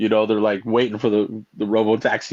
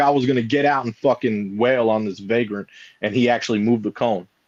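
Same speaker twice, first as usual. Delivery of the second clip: ordinary delivery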